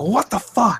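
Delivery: acted-out, very high-pitched, angry mad blurt. Retelling a tv scene where a father catches his son: imitating someone angry. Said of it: "he gets all mad at him".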